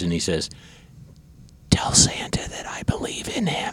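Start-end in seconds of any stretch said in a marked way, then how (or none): 1.7-3.7 soft high-pitched whisper. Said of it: "and he whispers".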